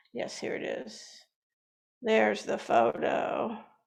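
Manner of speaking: rough raspy voice. Showing a photo during a talk, in a gravelly voice. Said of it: "excuse my gravelly voice".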